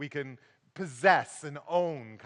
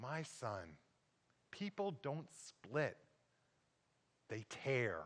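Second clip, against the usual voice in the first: very soft, quiet, calm and loving voice; 3 semitones lower, 14 dB quieter than usual. Speaker quotes a dad answering his son, retelling a calm, loving voice. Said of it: "in a very calm and loving voice".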